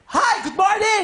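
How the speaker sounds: high, loud, furious yelling.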